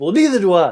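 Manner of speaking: loud, heated, angry tone. Showing the other speaker how to say the line: angry. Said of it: "Say it angry".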